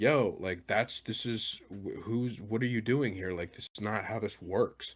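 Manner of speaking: usual speaking voice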